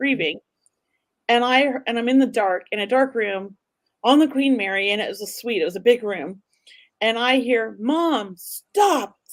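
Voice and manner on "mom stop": put-on calling voice, pitched up. Retelling hearing her son's voice in a dark room: imitating a loud call. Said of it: "so loud in my son's voice".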